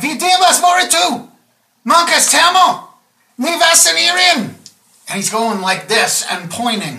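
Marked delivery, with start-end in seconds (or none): 0.0-4.5 very high, drawn-out, slow shouted alien voice. Voicing a figure who shouts at the listener, shouting in an alien language. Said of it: "he's shouting at you".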